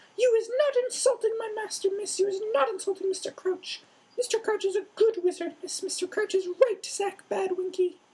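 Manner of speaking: very high-pitched, shrill screeching squeak. Narrator reads the house-elf's reply about her master: Winky's screech. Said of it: "and screeched".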